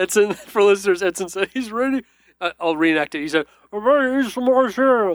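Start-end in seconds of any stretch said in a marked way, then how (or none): 3.7-5.2 mock talking with a full mouth, pitched much higher. Host reenacts for listeners what Edson said, imitating Edson with mouth half full. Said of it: "With his mouth half full".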